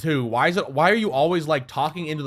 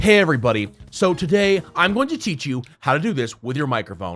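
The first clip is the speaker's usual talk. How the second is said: mock AI tutorial narrator voice; 2 semitones lower than usual. Retelling an ai tutorial video: imitating an ai tutorial voice.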